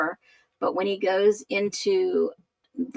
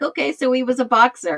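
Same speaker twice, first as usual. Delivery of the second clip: put-on sarcastic, tongue-in-cheek, raised voice; 5 semitones higher, 6 dB louder than usual. Retelling own reaction when someone said he was a boxer: retelling own sarcastic remark. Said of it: "You gotta get my sarcasm".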